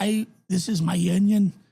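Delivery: put-on very slow, drawn-out Scottish accent. Recalling a movie line and imitating Norm's Scottish accent. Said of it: "Norm did the Scottish accent".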